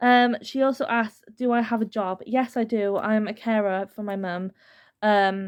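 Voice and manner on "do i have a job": normal talking voice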